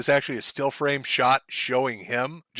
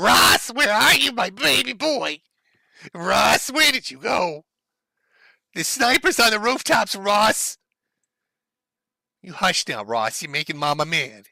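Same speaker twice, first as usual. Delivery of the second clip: piercing, shrill, high-pitched voice calling out; 7 semitones higher than usual. Acting out a mother screaming for her son: shrill mother's voice. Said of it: "she's got the most shrill voice".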